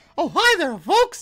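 very high, loud, squeaky cartoon voice. Asked during a game if they can do a Mickey Mouse impression: Mickey Mouse voice. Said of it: "It's a Mickey Mouse".

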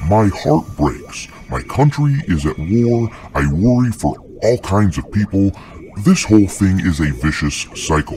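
ordinary talk

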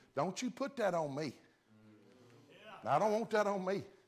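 put-on high Georgia accent. A son recounts his mama's reply to his offer to come down, imitating mother's Georgia accent. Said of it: "That was my mama's Georgia talk".

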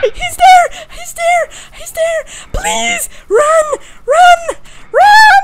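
very high, very loud, shrill, frightened screaming. Playing a game and hearing noises, scared screaming. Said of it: "I'm screaming like a little bitch".

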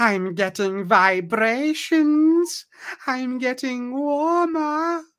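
high-pitched sorceress voice. Narrator reading the sorceress Mordana calling out as she closes in: high-pitched Mordana voice. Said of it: "you hear a high-pitched voice".

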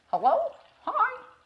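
thrown, very high parrot bird voice. Speaker demonstrating for a listener how they imitate a parrot: parrot impression. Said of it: "the way I threw my voice like that".

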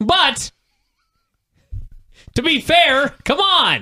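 passionate apathetic rant. Ranting about a match that was set up and never given: passionate apathetic rant. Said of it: "That was the most passionate, apathetic rant ever".

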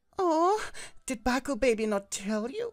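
very high, loud, shrill, giggling sweet lilt. Narrator reading a character greeting the listener who just woke, giggling. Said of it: "She giggled".

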